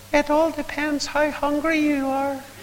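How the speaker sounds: tiny, very high, slow little voice. Retelling an Ulster preacher's answer to a question, in his little voice. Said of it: "said in his little voice".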